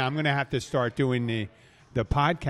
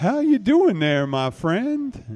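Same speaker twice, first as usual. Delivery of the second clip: rough put-on musician voice, raised and higher; 8 semitones higher, 6 dB louder than usual. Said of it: "I can't do his voice really well, but I'll try".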